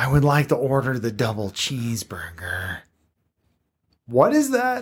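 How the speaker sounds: European accent drifting Californian, swooping pitch. Voicing an imagined alien Highlander in a European accent gone Californian. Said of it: "sounds like a European guy who's been living in California for too long".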